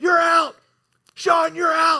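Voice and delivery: put-on, very high, shrill scream. Retelling a close call at second base, yelling at Sean: retelling screaming at someone. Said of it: "I start screaming at him".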